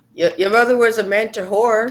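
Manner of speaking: high-pitched shouting in a character voice. Yelling a taunt in character during a fight: yelling out. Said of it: "Kane's gonna yell out".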